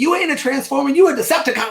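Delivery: shrill, high, loud, furious yelling. Retelling yelling at a driver who cut in front: retelling yelling at a driver. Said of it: "I'm yelling at him".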